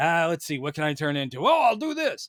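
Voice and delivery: a bit tough, rugged adventurer voice. Describing how a comic mercenary character sounded in his head: imitating Metamorpho sounding tough. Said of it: "a little bit tough and kinda like going".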